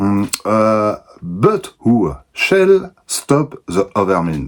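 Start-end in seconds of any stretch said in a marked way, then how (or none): 1.2-4.5 slow, put-on English accent, laid on thick. Reading a comic aloud in french, switching to english for a line: killer put-on english accent. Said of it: "avec mon accent anglais euh, de tueur".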